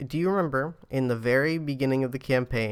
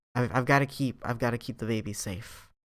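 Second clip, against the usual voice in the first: soft, hushed stage whisper; 5 dB quieter than usual. Voicing a character who glances around while speaking: stage whisper. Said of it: "stage whispers it to you and glances around".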